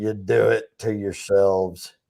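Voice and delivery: very low, gruff and rough delivery. Imitating how Bill always talked: Bill's gruff, rough voice. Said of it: "real gruff and rough".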